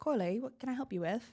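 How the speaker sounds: put-on light, friendly Australian accent. Retelling pulling the show's producer aside, Claire's Australian accent. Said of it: "That's a great accent".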